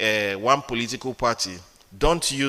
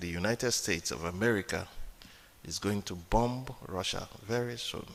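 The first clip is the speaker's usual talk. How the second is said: very quiet, low, hushed, even and calm; 4 semitones lower, 10 dB quieter than usual. Acting out how someone at western events declares war, saying it quietly. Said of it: "But he's saying it quietly".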